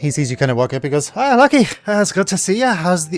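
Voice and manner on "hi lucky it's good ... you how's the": put-on Scottish accent, much higher pitch. Game master voicing Remy greeting a player's character, Scottish accent. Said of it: "And he doesn't have a Scottish accent".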